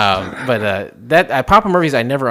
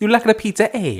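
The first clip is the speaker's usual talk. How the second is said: put-on Italian accent, much higher; 9 semitones higher than usual. Joining in on a joke about doing accents, in an Italian accent. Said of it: "Doing the Italian accent is great".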